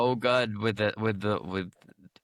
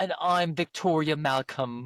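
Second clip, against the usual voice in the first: put-on, high, posh accent; 6 semitones higher than usual. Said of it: "say one more thing for me".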